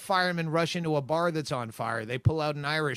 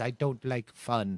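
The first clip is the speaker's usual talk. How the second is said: homemade put-on Scottish accent, played for laughs; 5 semitones lower than usual. Quoting the manager's catchphrase in a Scottish accent. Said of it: "That's my Scottish accent".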